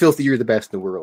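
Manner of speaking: ordinary delivery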